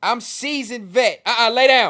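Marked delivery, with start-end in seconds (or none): 1.3-1.9 sudden, very loud shout. Telling a dog to lie down during a stream: yelling. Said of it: "I didn't mean to yell on the mic".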